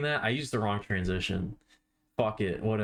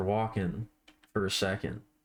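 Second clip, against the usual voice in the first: ordinary delivery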